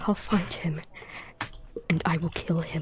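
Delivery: quiet whispered mutter under the breath. Voicing a character vowing revenge, said under his breath. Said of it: "he says under his breath".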